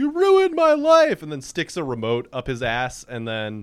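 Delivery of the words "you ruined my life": piercing, very high, very loud shriek. Retelling a line a kid screams in his room: imitating a scream. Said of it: "screams in his room and goes".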